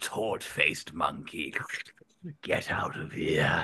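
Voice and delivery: deep, low, slow put-on character voice. Showing the final character voice after lowering the pitch: lower-pitched character voice. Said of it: "we lowered the pitch as well. And then we came to this kind of like".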